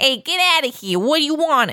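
put-on Jersey-accented voice, pitched high. Talking about people with Jersey accents, mimicking one of them: imitating a Jersey accent. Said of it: "with the joysy accents and like the Jersey".

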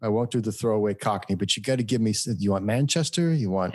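plain

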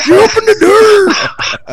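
high, slow mock Scottish accent. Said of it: "why did he sound all Scottish?".

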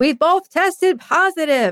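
high, mock screamed delivery. Retelling a partner on the phone in the neighborhood: imitating someone screaming. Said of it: "he's, like, screaming".

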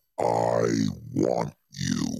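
very low, creaky, rough demonic growl. Retelling a flying devil landing and pointing at him: imitating the devil's voice. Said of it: "it had a voice just like this".

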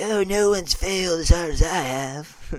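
loud, high, slow and boastful, stretching out "have". Retelling a joke line after being told it sounds like Donald Trump: Donald Trump voice. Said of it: "you sound like Donald Trump".

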